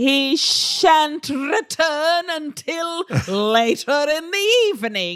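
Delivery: put-on over-enunciated mid-Atlantic accent. Mimicking a character's formal speech for the others, mid-Atlantic accent. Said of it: "the mid-Atlantic accent".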